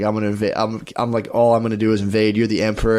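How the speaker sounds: ordinary talk, nothing marked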